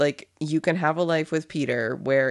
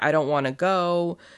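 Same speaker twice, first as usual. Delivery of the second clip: put-on tearful, crying voice. Retelling a scene where a character cries at the elevator: imitating someone crying. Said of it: "she's, like, crying".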